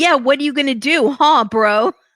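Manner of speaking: very loud, thuggish, street-tough taunting voice. Retelling a woman getting in people's faces: imitating Renee talking like a thug. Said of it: "talking like".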